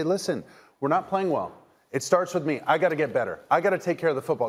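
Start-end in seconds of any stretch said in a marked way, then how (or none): none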